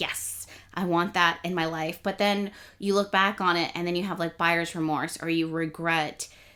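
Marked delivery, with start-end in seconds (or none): none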